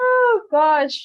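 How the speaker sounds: shrieking laugh-talk, very high and very loud. Reacting to a question from another speaker, laughing while talking. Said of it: "I'm sorry for laughing".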